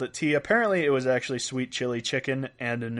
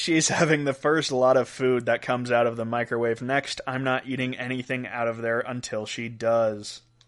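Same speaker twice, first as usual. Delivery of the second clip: plain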